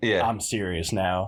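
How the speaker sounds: really deep, serious, cool hero voice. Imitating Goku's transformed voice, really deep Goku voice. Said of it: "he gets that really deep".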